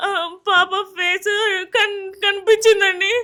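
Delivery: tearful, high-pitched.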